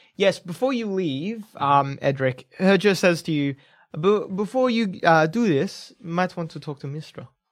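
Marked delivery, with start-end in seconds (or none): 4.0-7.3 put-on general Nordic accent. Game master speaks as Herger to the player's character Edric, in Herger's Nordic accent. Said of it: "General Nordic".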